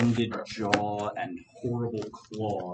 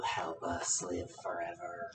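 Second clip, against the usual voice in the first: harsh, rasping, awful voice, hushed and slow; 3 semitones lower, 8 dB quieter than usual. An unfamiliar voice calls to the party from the hallway; raspy, awful voice. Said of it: "in a raspy, awful voice going".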